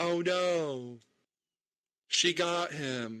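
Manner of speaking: very slow, high, badly faked innocent voice. Retelling a movie scene, imitating Sammy's fake innocent tone. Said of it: "the way she says it is like".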